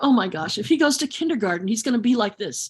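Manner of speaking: usual speaking voice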